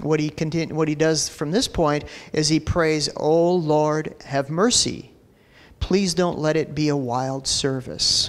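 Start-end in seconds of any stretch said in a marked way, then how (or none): 3.2-8.3 put-on low, muttered voice. Retelling a preacher's kid praying in church: imitating Mark praying under his breath. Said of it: "under his breath".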